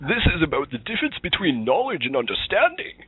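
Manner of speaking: masked-villain voice, high, swooping. Trying out a practiced impersonation, doing a Bane impersonation. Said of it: "let me see if I can do my my Bane impersonation".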